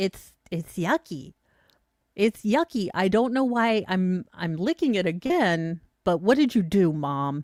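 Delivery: put-on voice of a little puppy talking. Speaker voices a puppy licking a lemon: voicing a puppy. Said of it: "He's like".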